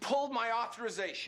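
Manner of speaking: shrill, loud yelling, pitch way up. Confronting the person who pulled the MRI authorization, yelling. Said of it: "why are you yelling?".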